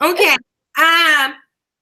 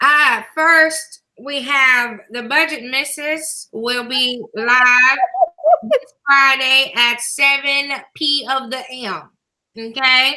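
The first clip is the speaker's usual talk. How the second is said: slow, proper, good church-mother voice. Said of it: "I'm gonna put on my good mother voice".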